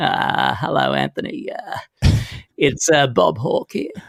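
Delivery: slow, deliberate, unhurried, drawn-out put-on voice. Retelling a phone call from Bob Hawke: Bob Hawke voice. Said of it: "I heard this voice going".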